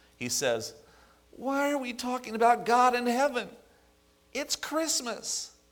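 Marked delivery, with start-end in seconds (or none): 1.3-5.5 very high, whiny, complaining voice. Retelling a scene where Raymond overhears a conversation and speaks up, Raymond's whiny voice. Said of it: "in his whiny style of voice".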